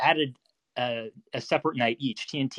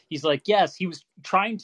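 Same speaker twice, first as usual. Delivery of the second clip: plain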